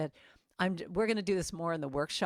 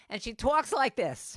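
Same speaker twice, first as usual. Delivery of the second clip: fabulous, showy put-on New York accent, pitched up; 5 semitones higher, 4 dB louder than usual. Introducing a friend from New York to listeners, imitating Noreen's New York accent. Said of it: "she lets me mock her like this because her accent".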